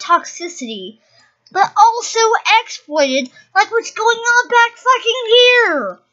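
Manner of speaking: very loud, very high, shrill angry rant. Ranting about a YouTuber's fan base flooding the game they love, angry. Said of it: "why I'm so angry right now".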